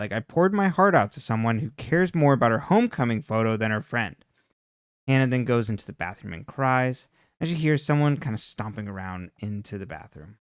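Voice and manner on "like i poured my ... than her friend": ordinary delivery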